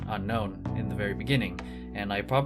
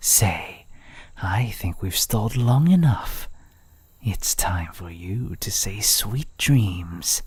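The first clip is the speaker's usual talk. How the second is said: flirty character voice, louder; 6 dB louder than usual. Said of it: "Flirty Assassin (Day 1)".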